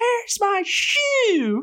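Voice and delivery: very high-pitched, drawn-out, sing-song squeaky "shoe". Speaker retells an early cold morning heading to the track: Riley's high-pitched voice. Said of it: "with that high pitched voice".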